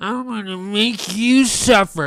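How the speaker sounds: slow, loud mocking voice. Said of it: "He's like".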